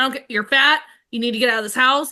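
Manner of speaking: put-on scolding, laying into tone. Retelling a TV scene where the mom lays into her son: imitating a mom scolding. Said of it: "lays into him".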